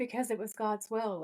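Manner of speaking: put-on peaceful, breezy, serene cheerfulness. Retelling what a character said about stabbing a man: imitating someone at peace and happy-go-lucky. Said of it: "she's so, like, at peace and happy-go-lucky when she says it".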